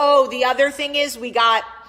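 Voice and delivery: booming, very loud shout. Parent talking about what they decided for their children, yelling. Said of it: "I don't know why I'm yelling, I'm screaming".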